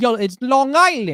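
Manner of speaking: put-on Jamaican accent. Streamer giving a shout-out to long island, in a jamaican accent.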